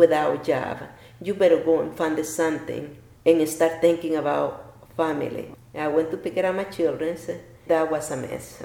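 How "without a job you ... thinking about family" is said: ordinary talk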